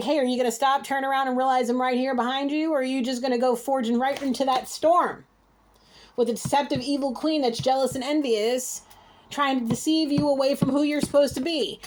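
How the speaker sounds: normal talking voice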